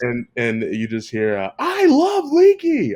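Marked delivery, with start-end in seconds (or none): 1.6-2.9 very high, very loud shriek. Retelling a commentator's call of a clutch free throw: imitating commentator screaming. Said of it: "I'm sorry, I keep screaming".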